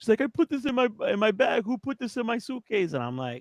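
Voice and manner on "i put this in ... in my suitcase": high, tearful voice, crying through the words. Retelling a friend's tearful reaction at airport security: imitating Allison crying. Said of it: "Allison started crying".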